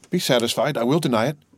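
ordinary delivery, nothing marked

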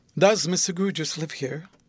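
ordinary delivery, nothing marked

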